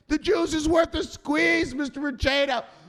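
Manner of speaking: emphatic, shouted, very high, loud, forced. Character ordered to repeat the phrase louder like they mean it, saying it louder. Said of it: "Say it louder like you mean it".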